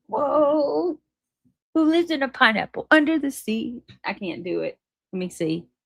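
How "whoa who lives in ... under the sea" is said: high cartoon pirate voice, whoa drawn out. Trying out cartoon voices, quoting the pirate's opening question in a cartoon pirate voice. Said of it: "about the pirate when he says".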